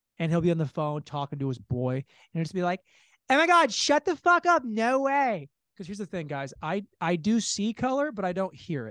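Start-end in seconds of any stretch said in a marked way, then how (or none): 3.3-5.5 very high, loud put-on girl voice.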